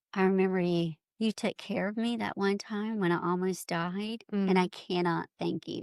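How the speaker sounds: usual speaking voice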